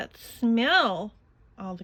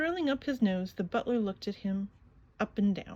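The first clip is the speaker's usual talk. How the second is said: ordinary delivery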